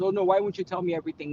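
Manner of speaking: put-on hurt, jealous, aggrieved, left-out tone. Retelling how some women react when jealous: imitating a jealous woman. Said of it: "some women I know will get jealous".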